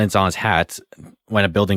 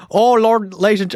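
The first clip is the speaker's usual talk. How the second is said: very high, failed put-on old-time radio announcer accent; 13 semitones higher, 4 dB louder than usual. Joking about a parody series, the speaker attempts a bad put-on accent. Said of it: "I can't do that accent for shit".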